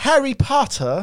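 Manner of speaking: high, loud British accent. Showing a British impression with one phrase: British accent. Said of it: "I can say".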